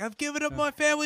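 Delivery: pretend screaming. Acting out showing up at another speaker's apocalypse warehouse: pretend screaming. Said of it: "I'm gonna show up screaming like".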